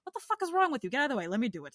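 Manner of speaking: put-on angry New York accent with swooping pitch. Describing how New Yorkers help people, imitating an angry-sounding New Yorker. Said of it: "we all sound angry when we're not".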